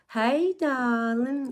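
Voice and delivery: put-on Southern belle accent. Recalling a habit of talking to each other, put-on Southern belle accent. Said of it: "talking to each other like Southern Bells".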